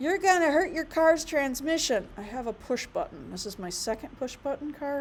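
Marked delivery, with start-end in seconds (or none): 0.0-2.1 high, hectoring, scolding yell. Retelling what people yell about the car: imitating people yelling. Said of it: "I've had so many people yell at me".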